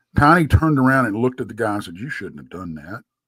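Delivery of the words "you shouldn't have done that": low, soft, nonchalant voice. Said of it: "All nonchalant".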